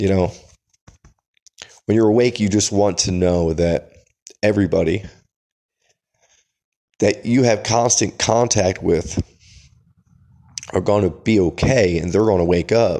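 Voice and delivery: choked-up, emotional voice with welling emotion. Speaker telling a story about Carla, choked up. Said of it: "I get a little choked up".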